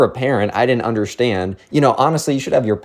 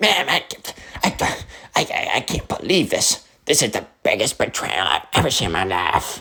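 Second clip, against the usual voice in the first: whiny cartoon kid voice, stammering; 4 dB quieter than usual. Retelling what he said after the misunderstanding, in a Cartman voice. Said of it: "now he's Cartman, I guess".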